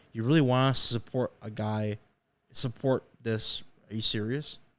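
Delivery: ordinary delivery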